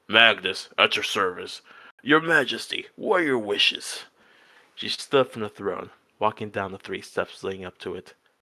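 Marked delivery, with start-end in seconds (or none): 0.1-4.0 rough-edged, soldierly voice. A narrator reads the soldier bowing before the queen; Magnus's deep, rough voice. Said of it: "spoke up in a deep, rough voice".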